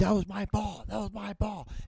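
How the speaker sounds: mock very high, furious, angry scream, sounding distant. Telling a golf story, voice the guy screaming over the hill; retelling a distant scream. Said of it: "you hear this guy screaming over the top of the hill".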